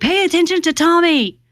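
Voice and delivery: high mock yell. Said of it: "Shaggy would yell at me".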